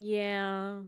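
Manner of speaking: very sad. Answering reassurance from another speaker: said very sadly. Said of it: "she says very sadly".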